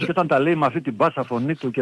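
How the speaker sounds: plain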